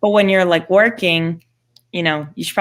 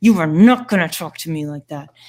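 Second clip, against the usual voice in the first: put-on speech through clenched teeth; 2 semitones lower than usual. Retelling scolding a kid at the zoo, retelling a gritted-teeth warning. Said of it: "through gritted teeth".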